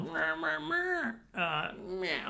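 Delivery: high-pitched, mocking, whiny put-on voice. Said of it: "the parent that was all like".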